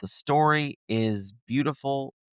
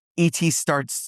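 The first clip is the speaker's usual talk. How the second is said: normal talking voice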